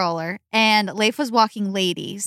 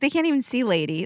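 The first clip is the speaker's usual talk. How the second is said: usual speaking voice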